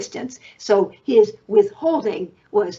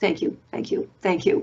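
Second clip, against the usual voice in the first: fast, hushed, whispered mumble under the breath; 2 semitones lower, 4 dB quieter than usual. Retelling how an analyst passing by thanked him, mumbled under breath. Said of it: "sort of under his breath mumbled".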